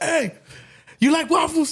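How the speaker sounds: very high, loud hollering call. Retelling a friend calling out the rolled-down car window: imitating a friend. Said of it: "He's like".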